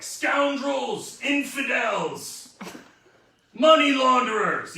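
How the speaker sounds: very slow, loud, stretched-out screaming. Showing how they scream at escaped prisoners they keep recapturing: screaming insults. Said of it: "really fun to scream at them like".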